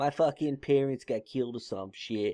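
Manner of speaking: put-on offhand, griping tone in a Boston accent. Riffing on a show where Ben Affleck plays him as a kid, Ben Affleck Boston-accent impression. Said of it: "The Boston accent".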